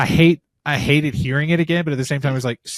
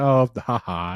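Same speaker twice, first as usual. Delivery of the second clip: fake, dismissive little laugh. Retelling a movie scene where she laughs at him: imitating laughing at someone. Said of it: "she kinda laughs at him".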